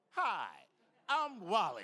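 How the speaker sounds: lively, outgoing, animated, sing-song voice. Retelling how Wally stopped and greeted him in the room: imitating Wally. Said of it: "heard him stop someone else and go".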